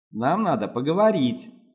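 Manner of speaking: plain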